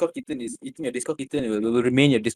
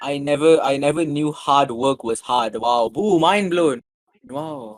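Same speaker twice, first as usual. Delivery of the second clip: loud, sarcastic, fake amazement; 5 dB louder than usual. Reacting to advice that hard work is good for you: sarcastic mock amazement. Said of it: "you say that sarcastically".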